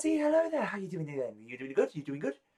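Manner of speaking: eager, happy, high, animated, cheerful voice. Voicing a halfling who greets you as you come up the stairs: enthusiastic and happy. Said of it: "quite enthusiastic and happy".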